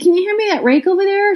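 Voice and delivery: sweet, polite, really nice, high-pitched voice. Retelling a neighbor asking her husband for the rake: imitating someone asking really nicely. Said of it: "She says it again really nicely".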